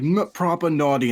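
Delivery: terrible put-on British accent, loud and high. Mocking a game character's line in a terrible british accent. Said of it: "that accent is terrible".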